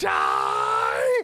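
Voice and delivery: over-the-top, movie-style dying yell.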